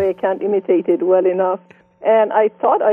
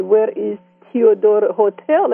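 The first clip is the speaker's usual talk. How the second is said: put-on English spoken in a Persian accent. Retelling asking a stranger for directions: imitating own Persian accent. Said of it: "with my Persian accent".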